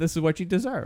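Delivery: ordinary talk, nothing marked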